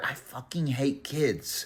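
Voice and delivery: irritated, slow, hushed whisper. Retelling what she whispered in the speaker's ear at the lane, retelling a whisper. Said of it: "She whispers in my ear".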